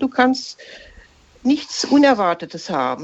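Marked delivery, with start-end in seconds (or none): none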